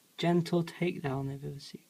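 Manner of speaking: plain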